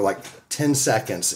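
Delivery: ordinary talk, nothing marked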